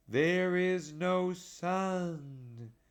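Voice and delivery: grave, very slow, solemn delivery. Reading a story, the witch repeats her words to the others: slow and grave. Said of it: "Slowly and gravely the witch repeated".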